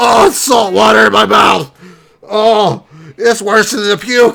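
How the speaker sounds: intoxicated speech. Complaining about salt water in the mouth at the beach, drunk. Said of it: "I'm so drunk".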